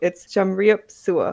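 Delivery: slow, unhurried, careful, deliberate pronunciation. Teaching a listener a Khmer greeting, repeating it: saying it slowly. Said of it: "I'll say it again slowly".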